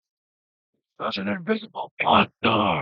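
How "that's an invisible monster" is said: high-pitched yelling in giant voice. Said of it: "he yells out in giant".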